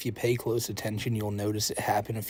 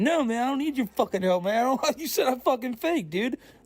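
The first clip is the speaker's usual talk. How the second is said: put-on, very high, irritated, upset ranting; 14 semitones higher, 3 dB louder than usual. Act out how he talks to his caretaker, imitating someone a little bit upset. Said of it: "he'll talk like that, when he's a little bit upset".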